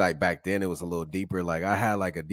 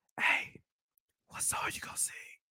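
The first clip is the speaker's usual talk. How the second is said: mimicked whisper, much quieter. Speaker retelling everyone waiting nervously in line at the piano, imitating people whispering. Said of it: "everybody whispering like".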